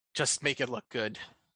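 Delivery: resigned, sighing, letting-it-go delivery. Voicing a beaten swordsman who drops his rapier: sighing, resigned. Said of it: "and he kinda sighs, and you hear".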